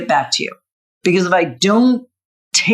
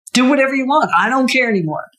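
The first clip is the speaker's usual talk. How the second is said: put-on angry voice, a bit higher; 5 semitones higher than usual. Retelling own past reply when pushed to decide: imitating own angry reply. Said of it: "But you would say it in an angry way".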